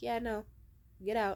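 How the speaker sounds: ordinary delivery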